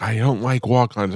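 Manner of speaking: mock upset, childlike voice on the verge of crying. Retelling a child refusing to go to a restaurant: imitating a child about to cry. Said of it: "she almost cried".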